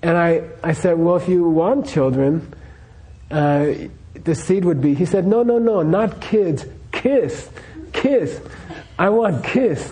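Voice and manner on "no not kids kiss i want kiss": put-on Norwegian accent, higher, slower. Retelling how a man corrected the speaker: Norwegian accent. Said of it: "he was speaking like in Norwegian accent".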